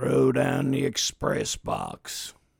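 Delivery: deep, low voice. Telling of a lone gunman stopping a stagecoach, his line: deep voice. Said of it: "In a deep voice".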